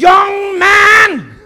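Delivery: very loud, shrill, very high shout. Retelling how a woman with fire in her eyes commanded him: imitating a woman shouting. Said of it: "så råbte hun".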